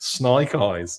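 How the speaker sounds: put-on Australian accent. Naming a revealed toy figure, snake eyes, in an australian accent. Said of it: "I don't know why I'm doing it in an Australian accent".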